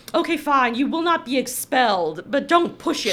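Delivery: normal talking voice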